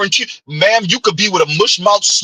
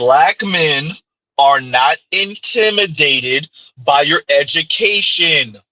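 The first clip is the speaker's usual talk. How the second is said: slow, measured, deliberate word-by-word delivery; 4 semitones lower than usual. Arguing a point, the speaker announces he will say it slow: slow, deliberate delivery. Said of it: "Let me say this slow".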